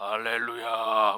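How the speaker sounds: very low, deep bass voice laid down heavy. Imitating how voices change as a church grows big: deep low voice. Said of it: "중저음으로 깔려요".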